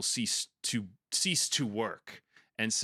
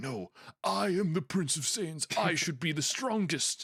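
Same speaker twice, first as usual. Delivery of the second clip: arrogant, pitched-up prince voice with wounded pride; 7 semitones higher than usual. Explaining a character's resentment of Goku, the speaker does a Vegeta voice. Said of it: "That was that was a good Vegeta voice".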